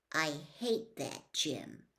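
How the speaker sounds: polite, hushed, quiet voice. Narrator reads a child answering after being asked to use a quiet voice in school, quiet voice. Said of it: "in my quiet voice".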